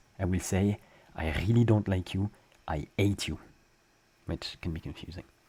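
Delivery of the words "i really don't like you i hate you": put-on French accent. Explaining what they say when they really dislike someone, with a French accent. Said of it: "you know what I will say with a French accent?".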